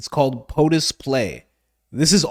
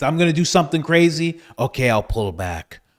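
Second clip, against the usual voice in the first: tough-talk bluster, bold, then backing down. Imagining Trump negotiating in the game: Donald Trump impression. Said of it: "the way he negotiates".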